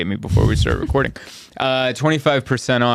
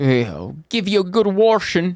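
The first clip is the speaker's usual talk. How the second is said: put-on Midwestern accent, pitched up, r slipped into "washing"; 8 semitones higher than usual. Friends discussing accents; speaker imitates the people they talked about, put-on Midwestern-sounding accent. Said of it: "I think that's Midwestern".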